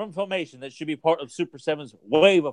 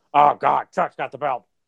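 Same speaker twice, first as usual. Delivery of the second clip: put-on wrestling promoter announcer voice, louder; 4 dB louder than usual. Retelling a friend's video game commentary: Vince McMahon impression. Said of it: "[name]'s done a great Vince impression".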